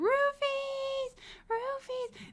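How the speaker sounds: mock screamed call, very high and shrill. Retelling losing a man's dog, the speaker re-enacts screaming its name. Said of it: "I'm screaming Roofies".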